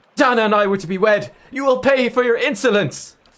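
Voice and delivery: snarled delivery. A narrator voices a man threatening the one who killed his beloved, snarling. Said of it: "his face darkens and he snarls".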